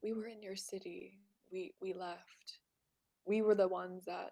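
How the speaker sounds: softest possible, barely there whisper. Speaking in character to a survivor in a city, whispering as softly as possible. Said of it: "whisper as softly as I can".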